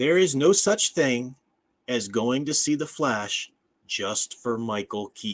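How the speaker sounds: very slow, deliberate enunciation, every word articulated. Addressing the audience so they really understand, very slow and articulated. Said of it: "I'm going to speak very slowly, and I'm going to articulate all of my words".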